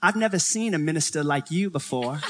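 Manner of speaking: put-on Georgia-style, deep South Southern accent. Speaker retelling what an older woman in Georgia said to him; Southern accent. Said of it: "she just looks at me in a Southern accent".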